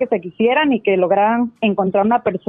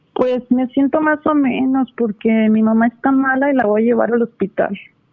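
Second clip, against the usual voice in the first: small, innocent-sounding little voice; 3 semitones higher than usual. Acting out a reply to a greeting in a planned bit: innocent little voice. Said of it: "con vocecita de, de inocente".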